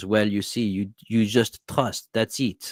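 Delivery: put-on heavy, thick French accent. Retelling what a French priest answered him, thick French accent. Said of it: "he goes in his thick accent".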